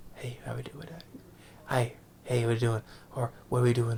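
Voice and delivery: put-on whispering action-star voice. Mocking an actor's current delivery: imitating Steven Seagal whispering. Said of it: "all he does is freaking whisper. He's like".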